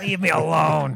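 very loud, aggressive, grouchy yelling voice. Imitating the other speaker's aggressive inner voice, aggressive Oscar the Grouch voice. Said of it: "It's like Oscar the Grouch on steroids".

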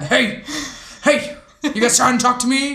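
ghostly, distant calling spirit voice. Imagining a seance, answering the callers in Kevin the ghost voice. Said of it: "Kevin the ghost would sound like that".

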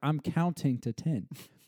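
ordinary talk, nothing marked

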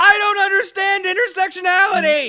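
full-on high, very loud, shrill shout. Speaker announces an alternate chapter title for this week, shouting. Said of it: "has to be said in a shouting voice".

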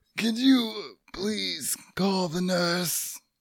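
soft, high, weak pleading voice. In an improvised scene, asking for the nurse as a dying patient on a deathbed. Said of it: "I'm gonna be on my deathbed".

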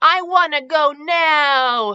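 very slow, high, stretched-out whine. Leo answers his dad's "soon" about getting the tree, whining. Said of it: "Leo whined".

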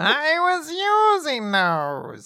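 very high voice, very slow and dragged out. Retelling a manga scene, voicing Ziggy complaining: Ziggy voice. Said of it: "I don't know why that's Ziggy's voice".

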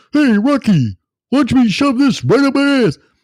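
very high, full cartoon moose voice. Doing a voice that speaks to Rocky: Bullwinkle voice. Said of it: "Should I start doing some Bullwinkle?".

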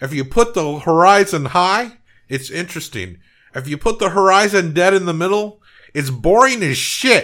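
high, loud, blunt pronouncement. Retelling a movie scene about where the horizon goes: David Lynch impression. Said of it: "I like your David Lynch impression".

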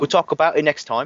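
jokey, fake, put-on British accent. A co-host puts off a game discussion until the next one, in a put-on british accent. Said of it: "was that British Tim?".

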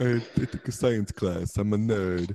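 mocking, put-on dumb football-jock voice. Mocking people who call themselves nerds, the speaker uses a put-on voice. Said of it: "I don't know why I've got that voice going".

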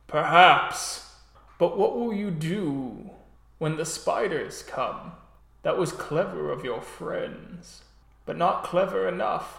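shifting, cracking, rough guttural voice. A character in a drama answering another character, in a cracking guttural voice. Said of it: "a shift and a crack and a guttural voice".

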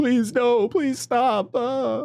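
very high, drawn-out, hysterical begging sobs. Retelling a man strapped to a chair begging, imitating someone crying hysterically. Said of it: "he starts crying like hysterically like".

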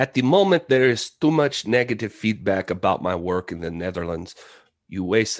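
put-on accent gradually sliding into a Spanish accent. Starting to quote a director's parting words: Paul Verhoeven impression drifting into Spanish. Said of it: "did I get Spanish all of a sudden".

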